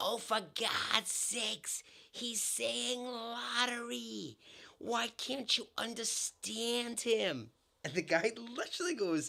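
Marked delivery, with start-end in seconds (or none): 0.0-7.5 high, shrill, very slow yelling, lottery stretched out. Retelling a ninety-year-old woman shouting at a man who misunderstood, imitating a shout. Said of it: "she shouts".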